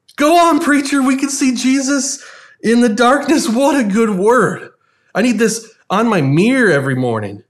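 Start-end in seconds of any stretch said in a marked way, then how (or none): 0.2-4.7 mock high-pitched called-out cry. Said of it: "someone yells out".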